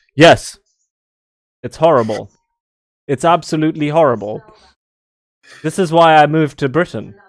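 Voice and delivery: put-on level, flat, expressionless deadpan. Retelling how a guy answered another guy's joking question, retelling a deadpan answer. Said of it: "them deadpan make an answer".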